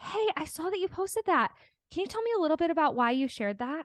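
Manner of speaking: sincerely curious tone. Asking someone why they shared a post, genuinely curious. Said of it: "even my tone shifted there, ... with a posture of genuine curiosity".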